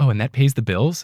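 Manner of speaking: put-on condescending voice. Retelling how people ask about podcasting as a full-time job: imitating a condescending question. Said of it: "condescendingly ask me".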